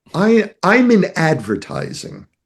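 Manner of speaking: halting, stumbling start, then swooping, animated, roaming pitch. Retelling a first meeting at a table: imitating Simon Sinek. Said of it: "just like this".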